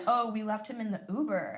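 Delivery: plain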